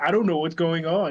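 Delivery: ordinary talk, nothing marked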